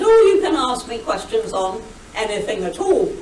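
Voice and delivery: ordinary talk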